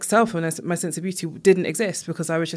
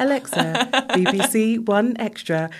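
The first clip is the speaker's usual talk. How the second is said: high, very slow, drawn-out put-on voice; 5 semitones higher than usual. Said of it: "That is the whitest voice I've ever had".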